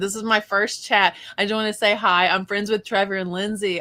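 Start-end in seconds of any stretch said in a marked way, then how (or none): none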